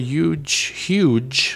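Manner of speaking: New York accent slipping out on 'huge'. Mid-question, the word 'huge' comes out with a New York accent. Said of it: "that's my New York accent".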